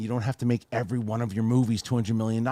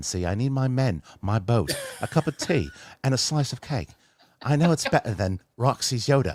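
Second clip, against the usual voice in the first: best, full-effort put-on British accent; 2 semitones higher than usual. Asked by the host to show his best British accent, the speaker performs one. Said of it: "in your best British accent".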